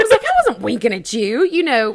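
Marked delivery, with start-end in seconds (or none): 0.2-1.4 disgusted tone, higher and louder. Retelling a drive-through mix-up, imitating own disgusted tone. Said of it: "I said it, like, kinda disgusted".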